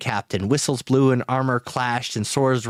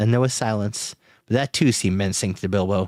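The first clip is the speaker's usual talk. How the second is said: plain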